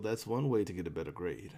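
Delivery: low, slight mumble under the breath. Voicing a character who takes a drink and speaks: slight mumble. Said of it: "you just hear them slightly mumble".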